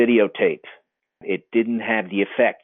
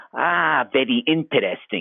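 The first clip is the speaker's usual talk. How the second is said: put-on Sardinian Italian accent; 4 semitones higher than usual. Retelling a man's reply to his explanation, in a Sardinian accent. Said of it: "with that Sardinian accent".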